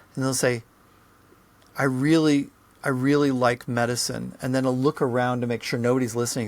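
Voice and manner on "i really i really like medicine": usual speaking voice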